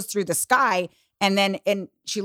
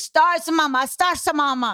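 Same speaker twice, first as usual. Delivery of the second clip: put-on angry child's voice, higher pitch; 7 semitones higher than usual. Retelling how her daughter got mad demanding stars: imitating her daughter getting mad. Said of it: "she was getting mad at me".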